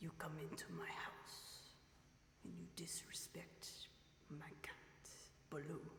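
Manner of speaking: whispered, breathy, low-key, barely above whisper. Doing an impression, then asking if it was good: Godfather impression. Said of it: "Was that pretty good as an impression?".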